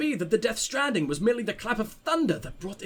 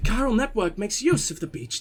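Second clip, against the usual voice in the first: bad put-on girl's voice, tannoy-announcer sound. Reading game text aloud, trying out a put-on girl's voice. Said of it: "am I gonna do a girl's voice?".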